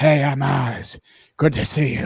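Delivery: loud, gruff voice, very drawn-out and slow. Mocking how most of the movie's characters speak: imitating a gruff Oz voice. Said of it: "is fucking everybody in Gotham a weird voice person".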